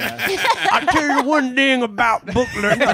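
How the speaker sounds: high cartoon voice. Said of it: "she talks like Foghorn Leghorn".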